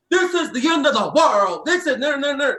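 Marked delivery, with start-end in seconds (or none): 0.1-1.6 loud, dramatic tv preacher proclaiming. Imitating guys on screen who sound like TV preachers: televangelist pastor voice. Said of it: "sound like a pastor that's on a televangelical thing".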